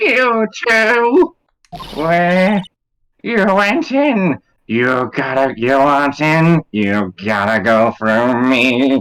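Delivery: put-on cranky, crotchety old woman voice. Voicing an old lady character who confronts two visitors; cranky old lady voice. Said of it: "very cranky old lady voice".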